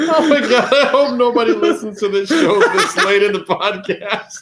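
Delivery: talking through barely held laughter. Reacting to a joke on the podcast, laughing while talking. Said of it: "There's no way I can keep kayfabe".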